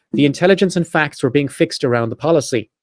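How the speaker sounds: ordinary talk, nothing marked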